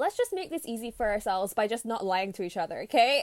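ordinary delivery

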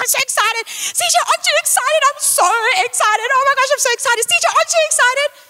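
very high, giddy, bouncing, excited gushing. Retelling jumping up and down at home over something small: imitating own excited self. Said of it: "I get very excited".

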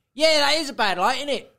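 loud, very high, carrying, casual offhand tone. Retelling how a woman spoke up during a gig, imitating someone speaking loudly. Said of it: "just as loud as that".

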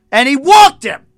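shouting. Reacting to a pitcher's walk while watching the game: yelling. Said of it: "There's no need to yell".

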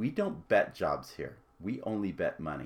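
mock stern, no-nonsense, hard-line voice. Retelling the executive's second reply in a meeting: imitating an even sterner voice. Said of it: "In an even sterner voice".

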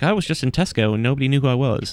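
casual, put-on British accent. Retelling a man's answer to an interviewer, in a British accent. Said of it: "Was my British voice".

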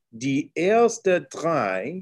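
slow deliberate pace, drei stretched. Recounting how they speak German while pointing, the speaker talks a little slower. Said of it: "I just talk a little slower".

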